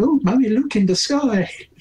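put-on very high-pitched small elf child calling out. Voicing a random elf child talking to its mother: elf child voice. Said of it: "this random elf child".

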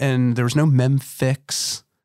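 slow drawl, dripping with sarcasm. Describing starting the business on fifteen grand: sarcastic. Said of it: "I hope you hear the sarcasm in my voice".

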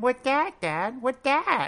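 put-on very high-pitched little-kid toddler voice. A parent retelling taking his two-year-old son to work, imitating Eddie's high voice. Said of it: "he either has like a high-pitched voice".

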